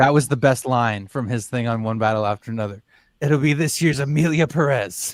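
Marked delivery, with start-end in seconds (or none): 3.2-5.1 bogus put-on Spanish-accented English.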